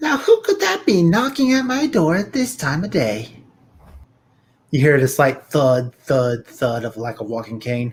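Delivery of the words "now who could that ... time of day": put-on old hag voice, very high, sing-song and swooping. Voicing an old hag hearing a knock at her door: old hag voice. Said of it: "old hag".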